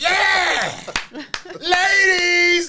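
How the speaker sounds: wild bugging-out holler, very high, shrill and loud. Retelling throwing roses at girls at a show: retelling own wild excited yelling. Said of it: "I'm out there bugging".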